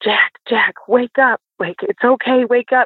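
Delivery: acted calling-out scream. Recalling screaming at a dreaming child to wake him up, retelling a scream. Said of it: "we're like screaming at him".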